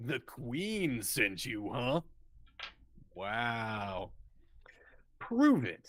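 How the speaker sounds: hushed rock creature voice, stretched "wow". Voicing the one on the left in a role-play scene, deeper voice. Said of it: "the one on the left with the with the deeper voice".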